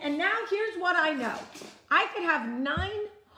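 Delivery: heated, worked-up, fired-up ranting. Giving advice to the listener, shouting. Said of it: "why am I shouting? I am shouting".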